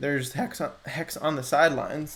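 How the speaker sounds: voice cracking. Talking through a liquidity chart: voice cracking. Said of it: "My voice is cracking today".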